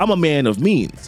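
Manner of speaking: plain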